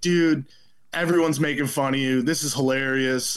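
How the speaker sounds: plain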